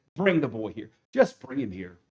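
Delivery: play-acted fed-up exasperation, very low and quiet. Addressing ladies and gentlemen, retelling a man's words, mock exasperated. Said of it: "the exasperation in his voice".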